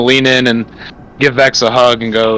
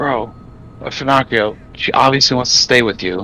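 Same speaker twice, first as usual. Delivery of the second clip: whispered aside, off to the side; 4 dB quieter than usual. A player's character pulls Fernacrio aside and talks to him: whispering. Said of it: "I'm whispering".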